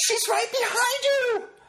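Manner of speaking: shrill, very high terrified scream. Retelling a friend yelling out during a movie: imitating Danny's terrified yell.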